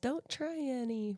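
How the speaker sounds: put-on sweet tiny-child voice. Retelling what two young kids say to the camera while cooking: cute little kid voice. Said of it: "in this cute little voice".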